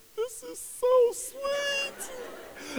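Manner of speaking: very high, slow, drawn-out, tearful gushing voice. Retelling the cashier's reaction in Chipotle, imitating a woman crying. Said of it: "she's crying".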